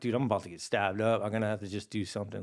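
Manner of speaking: ordinary talk, nothing marked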